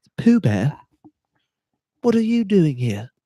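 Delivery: put-on very high-pitched, generic, unconvincing British accent. Talking about the Christopher Robin movie with others, try a failed Ewan McGregor impression. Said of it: "that just sounds like a regular British person".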